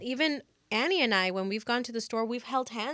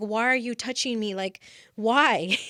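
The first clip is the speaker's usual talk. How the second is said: put-on angry voice, louder; 5 dB louder than usual. Retelling being touched without asking: imitating own anger. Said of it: "I was just so mad".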